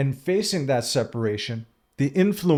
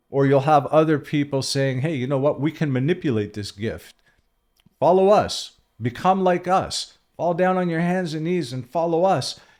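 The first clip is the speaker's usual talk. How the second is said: usual speaking voice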